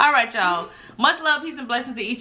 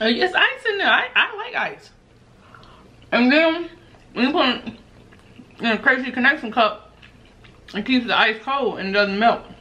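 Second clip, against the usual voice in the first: talking while chewing, mouth full. Replying to the other speaker while eating, talking with mouth full. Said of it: "You shouldn't even talk with your mouth full".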